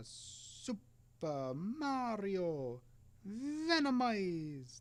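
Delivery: really bad fake Italian accent, high-pitched. Reading a chat message aloud: bad italian accent. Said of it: "that was a really bad Italian accent".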